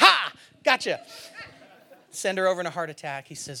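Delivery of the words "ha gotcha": loud, high, laughing mock gotcha. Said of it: "step out from behind the tree and just like".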